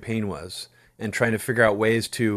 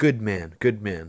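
muttered under the breath, put-on. Retelling a moment after a meeting, Donald Trump impression, under his breath. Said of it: "under his breath".

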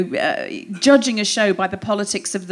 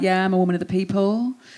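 put-on lazy drawling voice. Imitating a politician claiming to be of the people: imitating Priti Patel's lazy voice. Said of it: "She's got that really lazy sort of voice".

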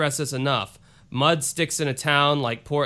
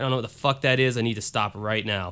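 ordinary talk

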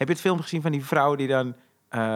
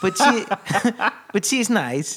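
put-on foreign-accented English, spoken slow and pitched up; 5 semitones higher than usual. Retelling what a friend said about his sister's baby: Borat-like accent. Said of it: "hij heeft een soort Borat-accent".

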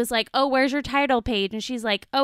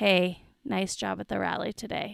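put-on creepy male voice, quieter; 3 semitones lower, 6 dB quieter than usual. Retelling what a man said to the speaker's friend, imitating a creepy voice. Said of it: "Just like in a really fucking creepy voice".

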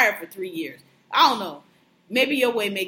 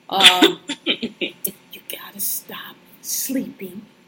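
put-on serious whisper, much slower. Retelling what Mimi told him, imitating Mimi's serious whisper. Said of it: "her little whisper, I'm serious voice".

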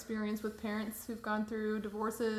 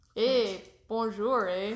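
mock French Canadian accent, louder; 7 dB louder than usual. Joking about being part french canadian: put-on french canadian accent. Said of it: "That was pretty good".

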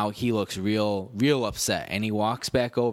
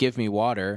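put-on gruff, rude, demanding tone. Acting out a rude way to order at a bar: imitating a rude demand. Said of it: "slamming my fist down and say".

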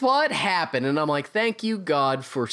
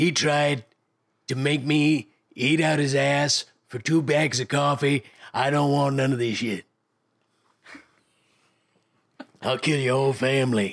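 put-on cartoon villain voice; 3 semitones lower than usual. Performing a line in character in a mock court scene: Beastman voice. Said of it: "starting to sound less like Beastman and more like a shitty combo of Vito Corleone".

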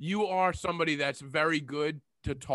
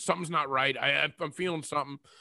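ordinary talk, nothing marked

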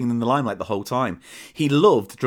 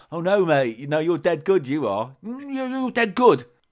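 high, sarcastic, put-on fake flattering tone; 5 semitones higher than usual. Retelling how a mate praised a performer: imitating someone taking the piss. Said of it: "obviously taking the piss, going".

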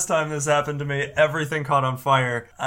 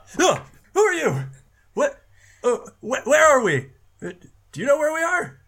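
put-on old gnome character voice, much higher, louder; 13 semitones higher, 3 dB louder than usual. Voicing an old gnome a player has just greeted, old gnome voice. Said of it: "and you see an old gnome".

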